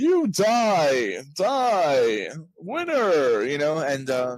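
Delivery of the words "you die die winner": robotic voice, slow and loud. Imitating a side character's voice from Fallout New Vegas: robot voice from Fallout New Vegas. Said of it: "this voice".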